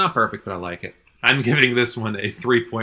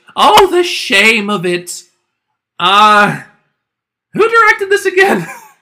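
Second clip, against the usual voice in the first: very high, shrill, loud, very drawn-out swooping cartoon voice; 12 semitones higher, 12 dB louder than usual. Quoting a lead character's younger nephew from a show, in a higher-pitched voice. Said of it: "going in a higher-pitched voice".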